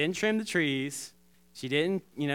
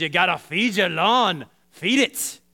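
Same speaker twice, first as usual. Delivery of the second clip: loud, put-on Scottish accent. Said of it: "he's doing, like, a Scottish accent".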